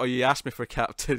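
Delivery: ordinary talk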